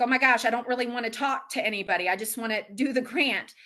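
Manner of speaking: plain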